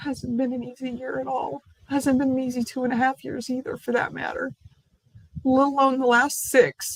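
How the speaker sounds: crying. Speaking to their audience about several hard years, crying while speaking. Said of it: "I didn't mean to start crying".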